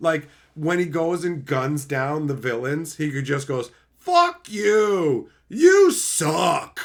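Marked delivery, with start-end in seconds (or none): 4.0-6.8 very slow, loud, high, blunt yell, "you" stretched. Describing how the hero yells while gunning down villains, imitating someone yelling. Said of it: "that's all he's yelling at them".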